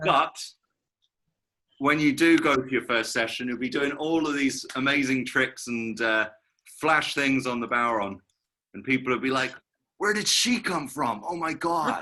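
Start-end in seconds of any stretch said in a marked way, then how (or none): 10.0-12.0 high-pitched, put-on American accent, exclaiming. Encouraging a listener, the speaker imagines people reacting at her first session: put-on american accent. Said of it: "in an American accent".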